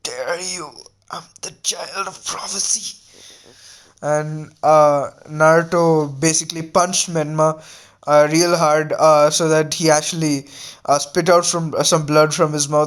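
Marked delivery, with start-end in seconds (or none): 0.0-3.0 very quiet, really weak, feeble voice. Telling a fight story, voicing the bloodied character's reply in a really weak voice. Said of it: "absolutely uh, like really weak voice came out".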